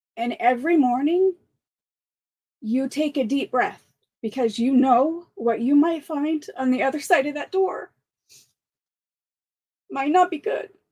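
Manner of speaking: fighting back tears. Describing opening a sick son's door each morning, holding back tears. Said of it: "I'm gonna try to say this without crying".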